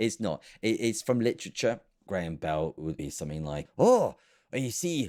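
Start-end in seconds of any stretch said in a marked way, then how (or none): 3.8-5.1 put-on Scottish accent, pitched slightly high. Imagining what Graham Bell would say, in a Graham Bell Scottish accent. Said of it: "this is Scottish accent, by the way".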